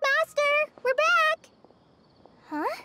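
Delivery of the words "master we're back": high, loud calling shout. Arriving back and calling out for their absent master: shouting. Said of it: "You don't have to shout".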